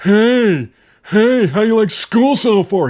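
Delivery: put-on shrill, teasing, high, drawn-out nervous voice. Retelling a movie scene where the little brother mimics the nervous dad: mocking a nervous voice. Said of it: "That's what you sound like".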